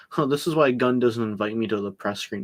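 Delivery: ordinary delivery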